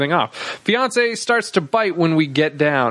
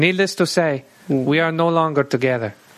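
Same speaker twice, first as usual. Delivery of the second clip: put-on Spanish accent. Recounting a breakup with a former partner, imitating Anthony's voice. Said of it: "That's an offensive voice".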